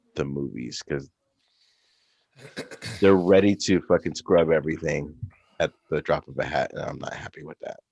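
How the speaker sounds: low, downcast, sorrowful, somber delivery. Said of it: "Your tone of voice seems very somber".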